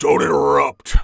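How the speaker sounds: very low, loud, booming, deep bass voice. Answering someone who asks how many are in there, in a really deep basso voice. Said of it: "you can hear this really deep, deep basso voice".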